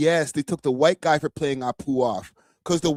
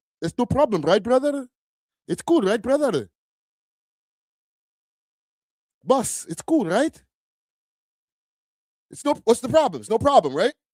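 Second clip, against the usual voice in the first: over-the-top put-on Indian accent, exaggerated, pitched up; 6 semitones higher than usual. After saying anyone can spoof an accent, the speaker puts on an indian accent. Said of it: "I'm doing the Indian accent".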